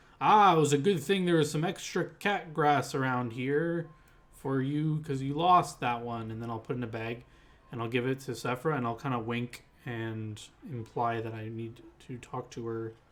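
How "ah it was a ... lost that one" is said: loud, showy, conspicuous made-for-show stage voice. Voicing a character making a show of it in front of others: loud and showy.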